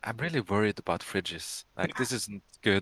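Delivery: speaking with the voice dropped and soft. Speaking in character to the group: lowered voice. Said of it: "I just lower my voice".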